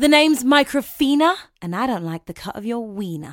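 low, put-on British accent. A talking microphone answers the person arguing with it: Microfina's British accent. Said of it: "it's not my fault you have a British accent".

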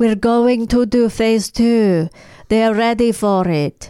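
put-on Russian accent. Imitating a show character announcing phase two: imitating a Russian accent. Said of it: "That's probably a better Russian accent than".

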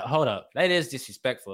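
ordinary talk

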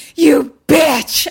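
acted-out mock scream. Recounting a scene, acting out what she screams: retelling a scream. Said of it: "And she screams".

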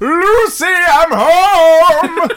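very high, very loud bellow. Charging forth in the game, the player's character calls out: bellowing. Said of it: "just bellow as I charge forth".

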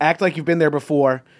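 normal talking voice

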